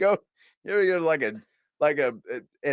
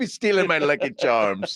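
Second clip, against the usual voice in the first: put-on Irish leprechaun accent. Joking with another speaker, repeating a line as the Lucky Charms guy. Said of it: "you sound like the Lucky Charms guy".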